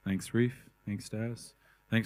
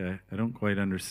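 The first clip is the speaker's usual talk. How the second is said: plain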